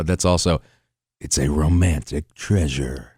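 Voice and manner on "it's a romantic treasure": very low, slow, drawn-out promo announcer voice. Doing a movie trailer line: Liam Neeson voice. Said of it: "my same voice, which is also Liam Neeson".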